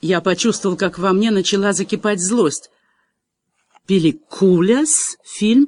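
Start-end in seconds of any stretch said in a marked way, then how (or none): 3.9-5.7 sounding surprised. A girl repeats the narrator's foreign word back to him, asking in surprise. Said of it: "удивленно переспросила девушка".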